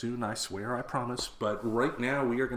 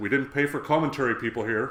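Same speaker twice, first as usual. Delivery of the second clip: raised, fatherly telling-off dad voice; 5 dB louder than usual. Retelling someone at the start of a movie: dad voice. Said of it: "Sterling had to break out his dad voice".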